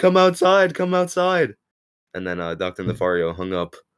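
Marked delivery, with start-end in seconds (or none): 0.0-1.5 shrill, very high, loud, top-of-the-lungs scream. Retelling how a friend screamed during a FaceTime call: imitating someone screaming. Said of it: "he screamed at the top of his lungs".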